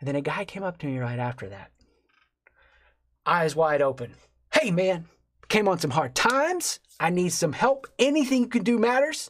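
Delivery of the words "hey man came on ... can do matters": acted, upbeat, unashamed, bright, high, energetic. Speaker retells a man coming up to ask for help, imitating his energetic, shameless ask. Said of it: "just energy, no shame".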